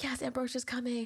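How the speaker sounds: eager, thrilled, all-excited happy cheer. Retelling how Sophia reacted to ambrosia when younger: imitating excited Sophia. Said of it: "all excited".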